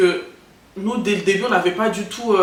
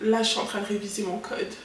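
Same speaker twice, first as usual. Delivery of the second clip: put-on flirty seductive voice, quieter; 9 dB quieter than usual. Redoing one's own past voice message to a crush: imitating own flirty voice. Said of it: "je te la refais".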